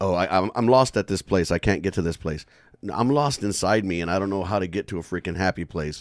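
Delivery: ordinary delivery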